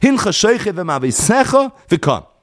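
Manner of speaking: v'kam joined onto v'mavisecha.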